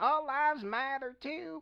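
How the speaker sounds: very high, mocking put-on caricature voice.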